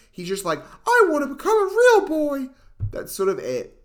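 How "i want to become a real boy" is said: squeaked out, high and loud. Criticising a film's Pinocchio, quoting him in a Mickey Mouse voice. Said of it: "I'm doing a Mickey Mouse voice".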